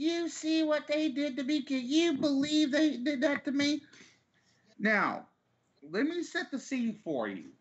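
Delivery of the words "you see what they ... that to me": play-acted high, raised yelling in a woman's voice. Retelling how a woman in the parking lot came up: imitating a woman yelling. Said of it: "she comes up yelling".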